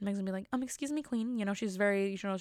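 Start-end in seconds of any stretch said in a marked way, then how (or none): 0.5-1.4 put-on American accent with pitch raised higher. Imagining Meg answering the Queen: Meghan Markle American accent. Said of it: "Meg with her, you know, American accent".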